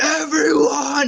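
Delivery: put-on shrill, high-pitched one-word scream. Retelling a famous movie scene, imitating Gary Oldman screaming. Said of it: "he screams".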